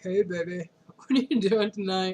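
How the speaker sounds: fake masculine voice. Teasing a boyfriend on the phone, pretending to be a guy. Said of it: "pretend to be a guy".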